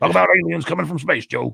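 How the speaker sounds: gruff, rough-edged voice. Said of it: "I can be Alex Jones".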